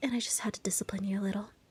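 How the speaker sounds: fast teasing whisper.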